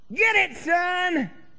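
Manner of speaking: hearty Southern holler. Imitating a North Carolinian yelling out, in a hearty southern accent yell. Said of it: "in a hearty southern accent yell out".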